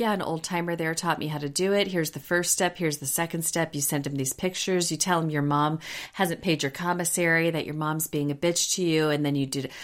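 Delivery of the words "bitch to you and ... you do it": ordinary talk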